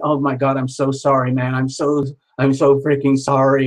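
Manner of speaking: mock sobbing, apologetic tone. Retelling an apology from a crying man: imitating someone sobbing. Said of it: "he's sobbing and he's crying".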